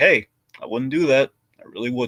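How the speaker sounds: put-on curt, blunt delivery. Retelling how a character warns about trying gum: imitating a curt warning. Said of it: "very curt warning".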